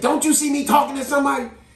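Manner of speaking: upset, shrill, very high and loud yell. Speaker recounts what a lady yelled at someone, retelling a yell. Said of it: "she did yell it".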